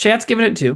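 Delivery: normal talking voice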